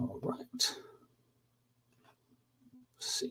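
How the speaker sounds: high, soft whisper, muttered to self.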